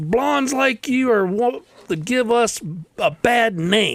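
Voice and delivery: put-on, high-pitched, furious, angry shrieking scream. Telling a joke, acting out an angry blonde by the road, imitating someone screaming. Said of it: "She screams out there".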